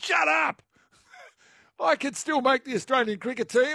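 high yelling. Retelling answering TV commentators who called a 33-year-old decrepit: retold yelling at the television. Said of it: "I was yelling at the television".

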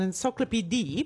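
encyclopedia pronounced with rising Italian accent.

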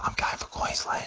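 whispered, really quiet, hushed and breathy. A speaker confesses their footy allegiance as a secret, said really quietly. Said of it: "I'll say it really quietly".

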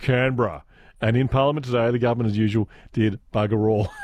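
plain

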